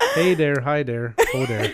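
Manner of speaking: loud, put-on upper Midwest accent. Told to keep the accent for the rest of the episode, a host tries it: put-on northern Midwest accent. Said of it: "continue the rest of the episode with the accent".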